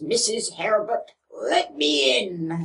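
very slow Scottish brogue. Retelling what a man said at a locked door: Scottish accent. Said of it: "Because he was Scottish".

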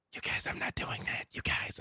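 whispered voice. Speaking in character to the group over a psychic connection: whispering. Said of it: "I'm still whispering in our psychic connection".

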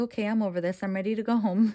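ordinary delivery

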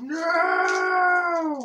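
high, loud scream. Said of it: "Stop screaming no".

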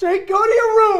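loud, tearful, sobbing yell.

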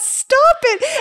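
playful fake yell.

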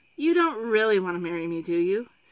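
coaxing, cajoling tone. Zimmerine speaks to a confused Therindel, coaxingly. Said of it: "Zimmerine said coaxingly".

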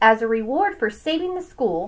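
ordinary delivery

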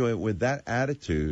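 normal talking voice

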